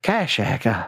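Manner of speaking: put-on woman's character voice. Speaker voicing a woman character again, trying to get her voice right. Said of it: "trying to get this woman's voice right again".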